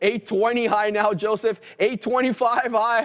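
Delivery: auctioneer-style calling voice, pitched high. Watching a stock break out with viewers, in an auctioneer voice. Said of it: "I got my auctioneer voice on here".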